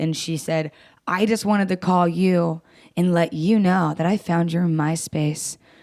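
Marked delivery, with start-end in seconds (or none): 1.1-5.5 put-on offended, defensive tone. Retelling what an offended caller said: imitating Donna, offended and defensive. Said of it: "she got really offended and defensive".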